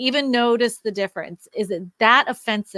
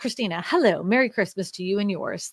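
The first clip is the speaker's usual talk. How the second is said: ordinary talk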